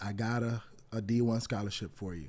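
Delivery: ordinary delivery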